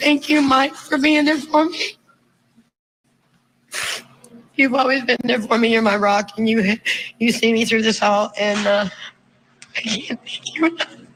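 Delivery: speaking through tears, tearful, crying. Addressing someone at an online family gathering, crying while talking. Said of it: "I'm crying".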